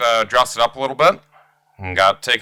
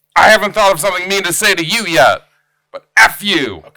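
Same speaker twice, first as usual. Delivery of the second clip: quick, loud, pitched-up, sassy and angry; 6 semitones higher, 5 dB louder than usual. Acting out a sassy, quick-tempered rant at friends: imitating a sassy angry rant. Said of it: "so sassy and quick with it".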